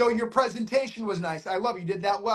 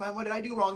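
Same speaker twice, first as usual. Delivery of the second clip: plain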